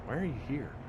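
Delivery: cool, cold, calculating tone. Greeting raiders while doing an impersonation of Mad Ducks. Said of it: "my best, uh, Mad Ducks impersonation".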